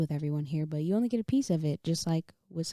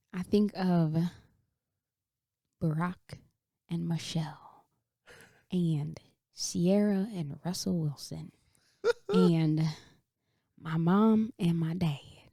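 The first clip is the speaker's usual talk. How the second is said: light touch of country accent. Answering a question about relationship goals, with a slight country accent. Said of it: "I had a little country accent at the end".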